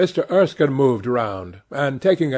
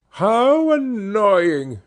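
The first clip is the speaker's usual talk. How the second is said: theatrical, high, put-upon cry of feigned despair; 7 semitones higher than usual. Told her carriage is waiting, the Duchess cried out. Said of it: "she cried".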